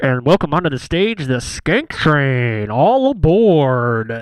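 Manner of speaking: loud TV announcer voice, "aboard" drawn out. Recapping a show's scene, the speaker mimics the announcer in an announcer voice. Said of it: "That was a good effect you just did right there".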